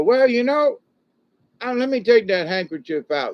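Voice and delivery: high-pitched, loud, teasing stage villain voice.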